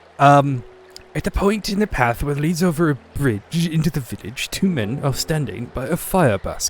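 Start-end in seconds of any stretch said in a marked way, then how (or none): 1.2-6.7 put-on upper-crust, posh British accent. Speaker narrates a scene in the story, in a posh British accent. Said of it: "just a posh British accent".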